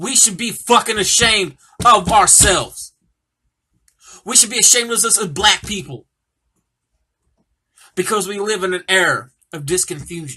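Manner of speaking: furious, heated voice. Talking about the community, the speaker vents: raised, angry voice. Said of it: "I'm raising my voice because I'm heavily fucking pissed off".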